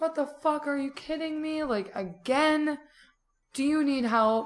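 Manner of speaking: mock, high-pitched yelling. Retelling hearing pounding and fearing another fire had started, retelling their own yell. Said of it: "So I'm like yelling like".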